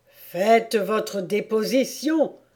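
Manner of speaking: angry voice, spoken angrily. The king repeats his demand to a trembling hatter, angry. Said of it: "répéta le roi avec colère".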